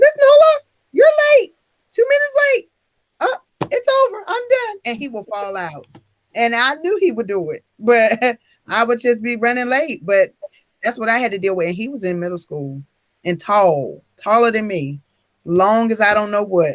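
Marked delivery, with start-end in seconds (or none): 0.0-4.8 very high, changed-up put-on kid voice. Retelling how one of her kids scolded her for being late, imitating his changed voice. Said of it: "That's exactly how he used to talk because he would change his voice".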